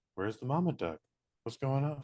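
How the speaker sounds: dazed, spaced-out, wondering stoned voice. Speaker tells the other person how they would act on his dose, imitating someone stoned. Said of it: "you would definitely be doing".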